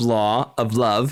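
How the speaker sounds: normal talking voice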